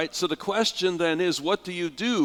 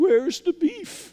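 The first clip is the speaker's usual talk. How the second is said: put-on very high, trembling, quavering old-lady voice; 13 semitones higher, 4 dB louder than usual. Retelling a hamburger commercial's line by a little old lady: quavering eighty-five-year-old voice. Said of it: "in a quavering eighty-five-year-old voice".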